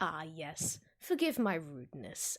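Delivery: mocking, derisive tone with lordly, noble courtesy. Voicing a lord who greets the party with a mocking bow: mocking lord's voice. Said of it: "he makes a small, uh, rather mocking bow".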